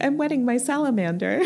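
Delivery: calm, serene, unbothered, matter-of-fact tone. Retelling how Janie answered Molly's scream, imitating Janie's calm reply. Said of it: "Janie is so calmly like".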